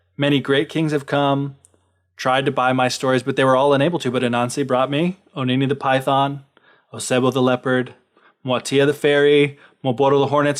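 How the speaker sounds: ordinary talk, nothing marked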